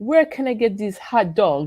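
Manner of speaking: put-on French accent in English. Retelling a conversation with a French colleague: imitating Bernard's French accent. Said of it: "I can't do a French accent".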